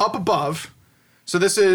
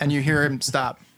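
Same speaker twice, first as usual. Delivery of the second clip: ordinary talk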